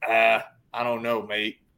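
amateur, slow, put-on Australian accent. Quoting someone's reply to a question about Live Golf money, imitated Australian accent. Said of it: "that was your best Australian accent".

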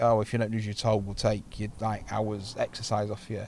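ordinary delivery

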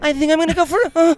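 very high, dweeby, nerdy porn-star voice. Imagining a woman answering an election question, nerdy porn-star voice. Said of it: "your porn star voice is kind of nerdy".

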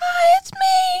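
small, tiny, very high-pitched robot voice. Voicing a smaller reset robot introducing itself; tiny small voice. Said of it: "What a small voice".

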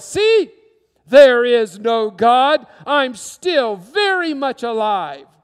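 big, booming, very loud delivery. Telling the story of Ingersoll challenging God, in Ingersoll's big voice. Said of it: "he said in his big voice".

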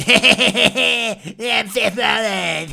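high, drawn-out, boastful tone with creaky laugh. Mocking a wrestler's annoying entrance talk: imitating Seth Rollins' annoying laugh. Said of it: "I sound like a fucking South Park character when I do it".

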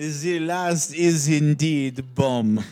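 bad put-on Eastern European accent. Announcing the last game pick in a bad Eastern European accent. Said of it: "adopted really bad Eastern European accents".

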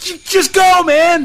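high, loud, slow, excited yelling.

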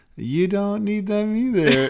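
very high, slow, funny little voice. Retelling a reality-show moment for another speaker: imitating Muhammad's funny little voice. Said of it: "in his, like, funny little voice".

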